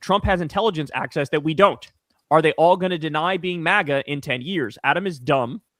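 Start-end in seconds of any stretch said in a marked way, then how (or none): none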